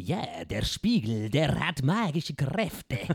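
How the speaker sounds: very slow, fake put-on Spanish accent. Imitating a villain who wants to buy a mirror, put-on Spanish accent. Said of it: "es gibt so einen spanischen Bösewicht ... Und der redet immer so".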